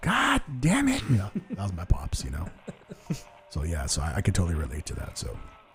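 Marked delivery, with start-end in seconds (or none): 0.0-1.0 very high, loud hollering yell. Retelling how dad yelled at the tv during football: imitating dad yelling. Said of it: "you hear my dad yelling at the T V".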